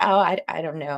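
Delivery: ordinary delivery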